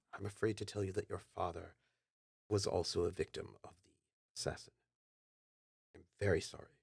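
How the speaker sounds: voice brought down, hushed. Stepping closer to the listener, speaking in a voice lowered a little. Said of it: "lowers his voice some".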